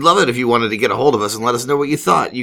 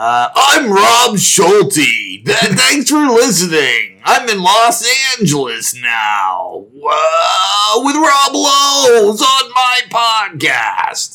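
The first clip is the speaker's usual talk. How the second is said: TV announcer voice, much higher-pitched; 8 semitones higher, 3 dB louder than usual. Podcast host signs off to listeners, in a Saturday Night Live announcer voice. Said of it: "The announcer for Saturday Night Live".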